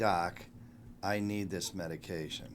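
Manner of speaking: ordinary talk, nothing marked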